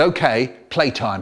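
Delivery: ordinary delivery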